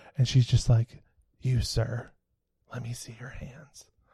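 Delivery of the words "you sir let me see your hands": put-on quiet, soft-spoken speech. Retelling a woman in an escape room checking hands: imitating quiet speech. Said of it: "She spoke very quietly".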